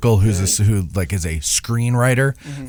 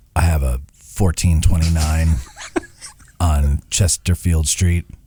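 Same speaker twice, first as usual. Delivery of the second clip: put-on deep serious voice, much lower; 6 semitones lower than usual. Coached to go a little deeper, the speaker does his deep serious voice.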